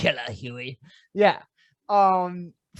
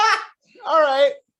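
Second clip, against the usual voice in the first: high, loud, excited cheer. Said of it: "I was like".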